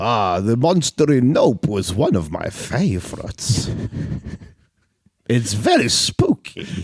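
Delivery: put-on creepy vampire voice with swooping pitch. Answering a question in character, in a creepy vampire voice. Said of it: "I'll go back to my creepy vampire voice".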